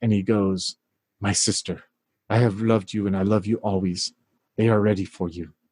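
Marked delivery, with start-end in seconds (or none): 1.2-5.4 whispering, lower pitch. Voicing a priest speaking to a kneeling player character: whispering. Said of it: "you can hear him whisper to you".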